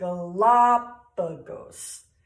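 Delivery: Galapagos with the second syllable la leaned on. Explaining how to pronounce Galapagos, stress on 'la' in 'Galapagos'. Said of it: "we're going to emphasize the second syllable".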